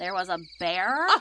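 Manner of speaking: low, doubtful, disbelieving, skeptical tone. Told her prank led to a bear attack, the prankster answers, skeptical. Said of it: "you do not get to sound skeptical".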